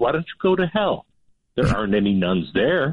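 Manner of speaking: very sweet, calm, put-on tone. Telling a joke, the speaker voices the Mother Superior answering the men in a mock-sweet, calm voice. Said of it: "in a very sweet and calm voice says".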